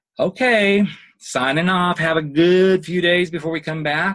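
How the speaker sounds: hint of a Southern belle accent. Saying goodbye before signing off, in a little Southern belle voice. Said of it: "did you hear my little Southern Belle voice show up there".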